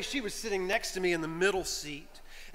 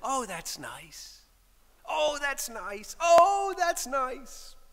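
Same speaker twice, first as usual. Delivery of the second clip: acted, very sweet and earnest voice; 6 semitones higher than usual. Retelling what the woman by the window kept saying on the flight, imitating a sweet, sincere voice. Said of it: "In the sweetest, most sincere voice".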